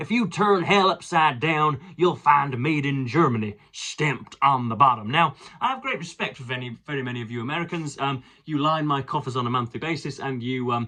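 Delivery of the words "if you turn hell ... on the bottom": put-on American accent. Quote a prayer given in the House of Representatives, in a stereotypical American accent. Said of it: "stereotypical American accent here".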